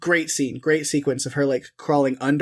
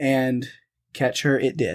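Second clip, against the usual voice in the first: normal talking voice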